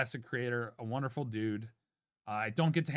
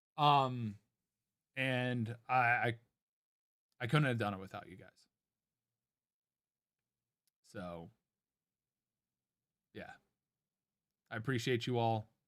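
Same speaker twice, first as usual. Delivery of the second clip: emotional, fighting to keep emotion down, holding back tears; 2 semitones lower than usual. Thanking the people who supported them through a tough year, holding back tears. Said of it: "I'm trying not to get emotional".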